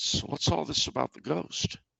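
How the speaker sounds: conspiratorial tone. Retelling a question to a waitress: imitating own conspiratorial tone.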